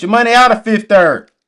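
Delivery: passionate, loud, high-pitched yelling. Speaking to the audience in the chat, yelling. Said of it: "Let me stop yelling at y'all".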